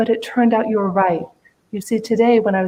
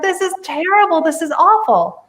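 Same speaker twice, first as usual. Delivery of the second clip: anguished, agonized, high-pitched cry of pain; 8 semitones higher than usual. Retelling a story of a king whose thumb was shot off: imitating screaming in agony. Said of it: "he's screaming in agony".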